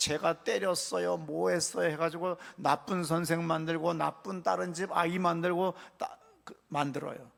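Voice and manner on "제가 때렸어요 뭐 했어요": mock crying child voice. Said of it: "막 울면서".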